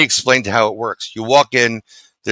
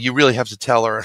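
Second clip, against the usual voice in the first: ordinary talk, nothing marked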